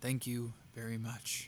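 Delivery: flat, level, expressionless, toneless deadpan. A student in a story responds after being told the time, deadpan. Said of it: "the student deadpanned".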